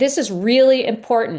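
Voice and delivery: pressing, forceful tone. Walking through how to set up a books section, in a raised voice. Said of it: "I'm raising my voice again".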